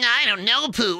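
very high and small voice. Answering a request to do another cartoon character: Piglet voice. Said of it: "fucking do Piglet".

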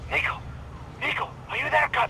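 very high, thin, hushed half-whisper. Calling out to a cousin, who then asks why you half-whisper; half-whispering. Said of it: "Why do you whisper?".

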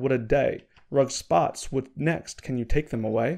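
ordinary talk

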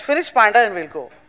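ordinary delivery

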